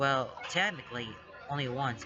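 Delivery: ordinary delivery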